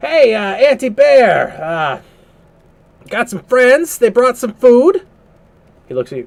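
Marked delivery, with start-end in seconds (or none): 0.0-5.1 very high, loud, hollering yell. Voicing a character calling out on arriving at a cave: yelling out. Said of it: "and he yells out".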